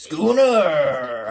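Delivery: loud, put-on pirate accent. Reading a name aloud in a put-on game voice: pirate voice. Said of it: "I'm saying it like I'm a pirate".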